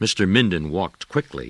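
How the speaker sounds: ordinary delivery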